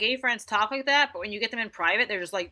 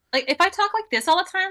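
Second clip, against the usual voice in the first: squeaky, very high, put-on girly voice; 10 semitones higher, 4 dB louder than usual. Showing how she'd sound talking like a typical girl: put-on high-pitched girly voice. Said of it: "like a typical girl with a high pitched voice".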